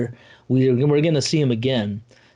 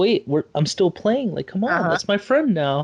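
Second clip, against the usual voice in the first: put-on high-pitched, upset child voice, protesting tone; 7 semitones higher than usual. Retelling the child protesting at being picked up: imitating an upset child. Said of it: "he was very upset".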